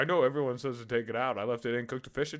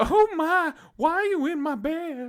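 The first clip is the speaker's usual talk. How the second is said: very high-pitched, put-on Arkansas accent; 6 dB louder than usual. Imagining what he would have woken up to, speaker tries an Arkansas accent. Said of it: "what kind of accent would he have been woken up to".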